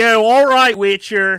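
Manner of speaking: broadest Philadelphia accent, very loud and high. Showing what he gets to say now: thick philadelphia accent. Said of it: "in the most Philadelphia accent".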